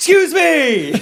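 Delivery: very high, loud, bursting shout. Imitating Tommy Boy making an announcement: Tommy Boy shouting for attention. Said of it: "It's like a Tommy Boy when he comes in".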